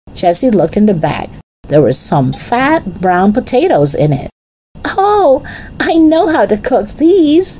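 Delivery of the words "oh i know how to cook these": delighted, very high, drawn-out happy cry. Jesse looks in Henry's bag of potatoes for supper and cries out happily. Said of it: "cried Jesse happily".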